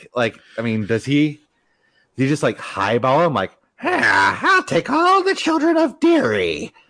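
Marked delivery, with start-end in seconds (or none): 3.8-6.7 very high, slow, swooping, creepy clown voice. Imagining a pay negotiation, speaker voices the demand in a bad Pennywise impression. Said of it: "that was a terrible Pennywise impression".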